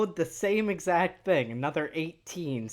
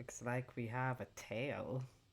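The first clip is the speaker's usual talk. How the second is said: quiet, much lower-pitched voice; 6 semitones lower, 15 dB quieter than usual. Speaking as Thorn in the game, the player makes a comment quietly. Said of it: "comment something quietly like".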